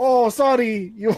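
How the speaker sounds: high-pitched put-on Portuguese accent. Acting like their mom in a story about the Xbox: put-on Portuguese accent. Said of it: "This is a Portuguese accent".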